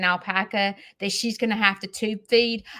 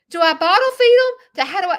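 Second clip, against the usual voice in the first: play-acted frantic, flustered panic, very high and loud; 10 semitones higher, 7 dB louder than usual. Retelling her reaction to hearing about tube feeding: imitating her own panic. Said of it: "I'm panicking".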